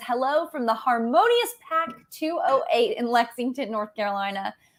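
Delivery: ordinary delivery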